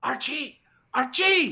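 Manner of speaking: forced stage whisper, calling out. A player's character climbs the stairs calling for someone, whisper yelling. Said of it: "like whisper yelling".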